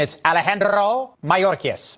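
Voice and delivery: name said in full, accurate Spanish pronunciation.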